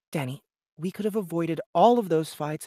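earnest, begging, pleading tone. Reading a story aloud, a character urges a friend: pleading. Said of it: "spoke pleadingly to him".

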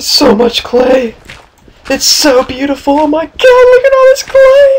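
thrilled, very high-pitched, loud gushing. Discovering lots of clay while mining, in an excited high-pitched voice. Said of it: "my voice just got so high pitched".

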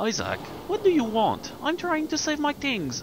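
very high, goofy, silly put-on squeaky voice. Playing a game, the player voices Garrett answering Isaac, Garrett character voice. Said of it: "I don't know why I give him this voice".

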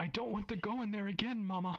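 put-on very high, shrill child's shriek. Voicing a child refusing to enter the mech: shrieking. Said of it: "the child shrieks".

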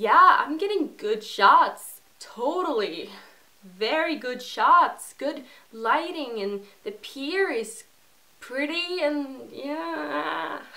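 heavy put-on American accent, laid on thick, drawn out. Retelling chatting with a man who must not notice a european accent: strongest american accent. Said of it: "with the most American accent I could master".

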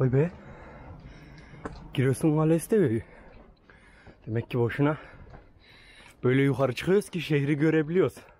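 winded, panting, out of breath. Talking while climbing stairs up to a castle, out of breath. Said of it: "Şu an soluk soluğa konuşuyorum".

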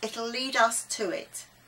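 usual speaking voice

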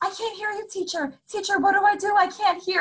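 put-on very high, worried, distressed child's voice. Retelling how first graders react when their audio cuts out: imitating a distressed student. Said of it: "you can hear the distress in their voice".

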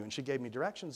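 ordinary delivery, nothing marked

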